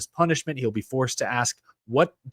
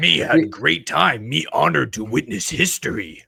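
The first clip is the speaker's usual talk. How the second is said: gruff, slow, rough put-on monster voice; 3 semitones higher than usual. Recounting a broadcast, in a Cookie Monster voice. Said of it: "That was my Cookie Monster voice".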